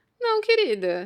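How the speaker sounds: mock wry sarcasm. Showing how she always says it, mildly ironic. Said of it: "eu sempre falo assim, meio ironicamente".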